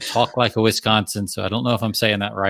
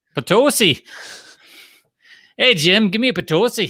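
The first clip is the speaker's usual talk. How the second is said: very high put-on Wisconsin accent, slipping toward Central Pennsylvania; 11 semitones higher, 3 dB louder than usual. Speaker testing whether they can do a Wisconsin accent: attempted Wisconsin accent. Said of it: "that was more like Central P A".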